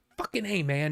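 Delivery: sudden, instantly pissed-off angry outburst. Retelling a clip from a making-of disc: imitating someone getting pissed off. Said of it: "he just gets all pissed off".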